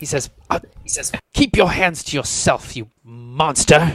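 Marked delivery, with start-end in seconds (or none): 1.3-3.9 spiteful, venomous, spat-out delivery. Voicing a courtier who snaps at a player grabbing him: venomous. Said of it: "spits venomous, venomously at you".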